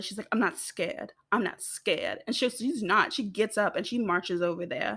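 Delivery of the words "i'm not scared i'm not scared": acted, mad, heated, insistent angry outburst. Retelling what a mad character says at the bus: imitating someone angry. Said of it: "Viva's mad and she's just like".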